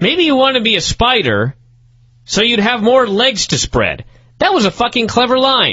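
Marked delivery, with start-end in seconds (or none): none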